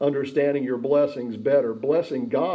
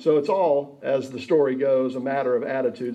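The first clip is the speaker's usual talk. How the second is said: ordinary talk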